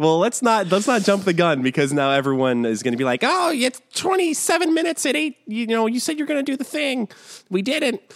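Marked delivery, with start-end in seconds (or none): 3.2-8.0 very high-pitched, taunting, mocking voice. Imitating listeners who mock the hosts: imitating people mocking us. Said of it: "That's the international voice of people mocking us".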